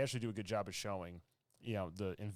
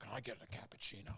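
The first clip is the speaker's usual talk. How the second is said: put-on gruff actor voice, quieter; 2 semitones higher, 6 dB quieter than usual. Retelling an actor's Al Pacino impression: Al Pacino impression. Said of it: "he does Al Pacino through the decades".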